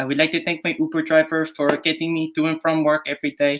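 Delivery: put-on high-pitched Filipino accent. Quoting the woman in the NHS advert, in a Filipino accent. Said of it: "like specifically Filipino accent".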